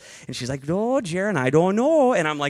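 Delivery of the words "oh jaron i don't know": put-on Northern accent, higher, old woman voice. Retelling what Nana says, in Nana's Northern accent. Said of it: "She's from the North".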